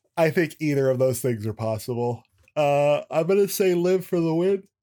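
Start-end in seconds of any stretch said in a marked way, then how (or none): 2.6-4.6 words said mid-yawn, pitched up. Giving a prediction of who will win, speaking through a yawn. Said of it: "I'm sorry, I'm yawning".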